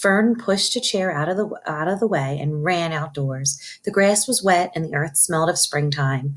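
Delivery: ordinary delivery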